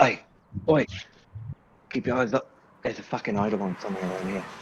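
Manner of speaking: hushed whisper under the breath. A game master voices a character sensing a nearby creature, whispering to the group without looking. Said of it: "he just whispers like".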